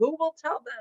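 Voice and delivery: high, calling-out yelling shout. Retelling how Elijah stood outside the cave: imitating Elijah yelling. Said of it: "he yells, like".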